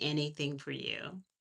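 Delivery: very calm, soft, composed. A mother retells answering her daughter's request, retelling a very calm reply. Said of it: "in a very calm voice".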